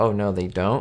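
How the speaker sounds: usual speaking voice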